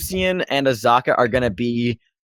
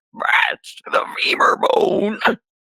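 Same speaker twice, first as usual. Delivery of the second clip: slow, raspy, croaking, scratchy mutter. Describing muttering voices heard from a cave, voicing one of them: croaking, scratchy voice. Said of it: "croaking, scratchy voices".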